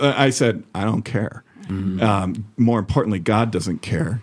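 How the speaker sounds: normal talking voice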